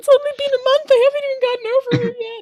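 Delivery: very high, loud, sobbing, tearful wail. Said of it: "And he starts crying".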